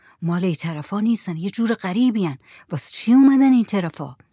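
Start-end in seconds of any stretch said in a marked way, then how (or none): none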